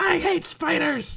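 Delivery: very high, frenzied, raging scream. Narrating a character stabbing a dead spider, retelling his raging yell.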